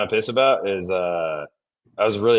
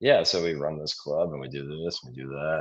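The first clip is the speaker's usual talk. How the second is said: put-on low, flat, very monotone, very normal delivery; 6 semitones lower, 6 dB quieter than usual. Imitating the listener talking in a media interview, very monotone voice. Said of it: "very monotone and very normal".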